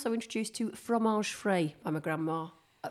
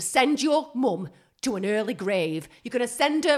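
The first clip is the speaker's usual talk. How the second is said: put-on loud, thick, broad, strong Yorkshire accent; 5 semitones higher, 7 dB louder than usual. Acting out a mother's words to her child, in a strong yorkshire accent. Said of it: "she's suddenly got a really strong accent. I think it might be Yorkshire".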